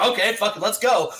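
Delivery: normal talking voice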